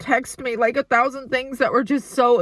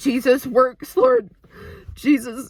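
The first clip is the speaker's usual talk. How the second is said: choked-up, overwhelmed voice catching, swooping pitch. Praising God for a friend's turnaround, overwhelmed and choked up. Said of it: "I can't even talk".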